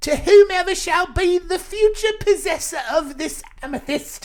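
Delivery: terrible put-on British accent, very high and loud. Reading aloud a nineteen seventy-two warning letter: terrible british accent. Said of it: "I'm going to do in a terrible British accent".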